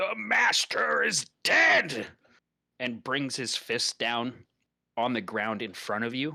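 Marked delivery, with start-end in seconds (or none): 0.0-2.1 very high, very slow, drawn-out rough billowing cry. The game master voices a creature answering a previously unknown voice: billowing shout. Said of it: "it lets out a billowing cry and just shouts".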